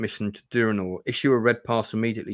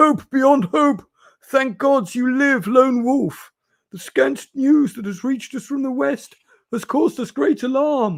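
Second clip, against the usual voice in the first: put-on very high, loud, raised old man voice; 6 dB louder than usual. Reading a gamebook aloud, a grey-haired official greets you: old man voice. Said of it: "That's my old man impression".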